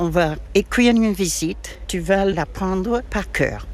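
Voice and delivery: ordinary talk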